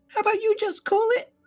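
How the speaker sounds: squeaky, very high little rat voice. Voicing the little rat that then casts a spell on the player, little rat's voice. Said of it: "This little rat goes".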